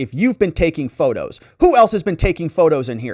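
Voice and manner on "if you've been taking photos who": usual speaking voice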